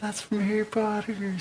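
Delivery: very high, far-off, distant yell. Voicing someone yelling off in the distance: yelling from far away. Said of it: "some voice yells off in the distance".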